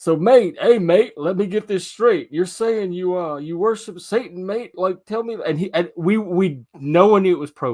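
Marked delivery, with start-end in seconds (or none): 0.0-5.4 assumed, put-on British character accent. Retelling how a man on a stream questioned them, imitating a British accent. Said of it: "this British accent".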